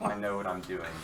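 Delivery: dismissive delivery. Playing a character in a scene, you reply to another character: dismissive.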